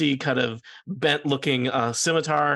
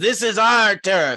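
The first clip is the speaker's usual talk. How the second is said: loud, high-pitched, sneering hobgoblin voice; 7 semitones higher, 6 dB louder than usual. A narrator voices a hobgoblin marching into the room: sneering. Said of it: "sneers, and looks around at all of these and says".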